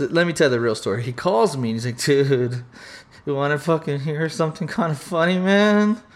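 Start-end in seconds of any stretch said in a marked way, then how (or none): 2.0-6.0 teary, on the verge of crying. Retelling a friend's phone call, imitating him sounding close to tears. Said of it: "he sounded like he was gonna cry".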